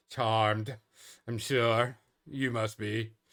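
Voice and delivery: snobbish, haughty, condescending tone. Voicing a character meeting the party: condescending snob. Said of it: "he's looking at you like your ass isn't supposed to be here".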